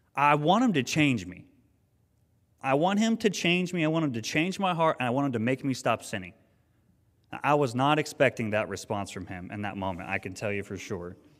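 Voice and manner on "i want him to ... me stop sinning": exasperated, fed-up, very frustrated outburst, pitched up. Retelling what the son answered when asked what he wanted, mock-frustrated voice. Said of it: "in a very frustrated voice".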